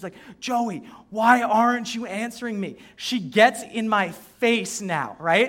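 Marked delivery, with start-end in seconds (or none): 0.4-2.8 mock yelling, slower. Retelling a teacher shouting at a student across the classroom, imitating her yelling. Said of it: "she's yelling in the back of the classroom".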